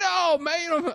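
put-on Australian accent. Retelling what a fan at a match said: imitating an Australian accent. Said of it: "this is my Australia".

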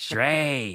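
sinister, evil demonic voice. Retelling their first word as a baby, in a mock evil demon voice. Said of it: "why did I say it like an evil demon".

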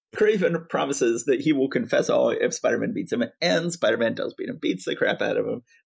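ordinary delivery, nothing marked

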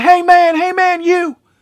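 mock, very high, loud scream, man stretched long. Retelling a man sprinting after them out of Thai Phuket, acting out his screaming. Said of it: "he's screaming".

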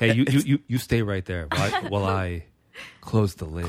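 mock sweet, nice, coaxing sweet-talking tone. Retelling own words to a partner during a shower hookup: imitating own nice tone. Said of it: "I say it nice".

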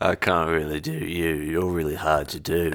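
very deep voice, pitched way down. Copying the other speaker's words back as an impression. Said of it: "That's pretty good, man".

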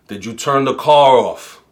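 put-on heavy, laid-on thick Brooklyn accent. Retelling a call for help with her car, the man answering in a thick Brooklyn accent. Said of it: "in his thick Brooklyn accent".

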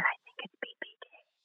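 put-on whisper. Retelling what the counselor said to her, imitating a whisper. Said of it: "she whispered to me".

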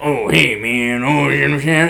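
imitated strong Creole accent. Describing the Legion commander from Hot Springs, the speaker imitates Willie's heavy Creole accent. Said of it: "heavy accent, Creole accent".

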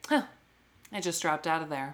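mock pointed, passive-aggressive delivery. Retelling a reality-show scene, acting out a reply: imitating a passive-aggressive tone. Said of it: "she gives it one of those passive-aggressive".

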